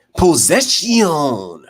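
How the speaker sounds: high, swooping, macho wrestling-promo voice. Calling a basketball game, saying possession as the Macho Man would. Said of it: "as the Macho Man Randy Savage would say".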